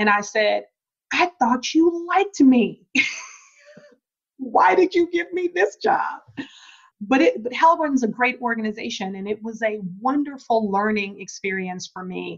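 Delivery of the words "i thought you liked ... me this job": laughing and crying at once, very high, swooping. Retelling walking into the boss's office: imitating laughing while crying. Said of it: "I'm kind of laughing, but also kind of crying".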